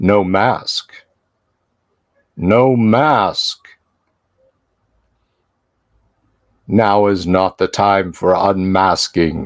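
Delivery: deep, resonant, ringing sonorous voice. Game master voicing a figure answering a player who refused him; deep sonorous resonant voice. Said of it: "a voice, deep, sonorous, resonant".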